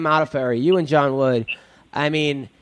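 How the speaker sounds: plain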